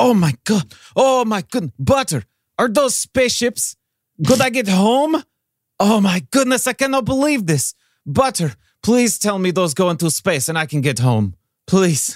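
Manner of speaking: high, super-excited, gushing voice. Spotting the planes, Snowball questions a companion: super excited. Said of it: "and he goes, / [name] gets super, super excited when he sees the planes".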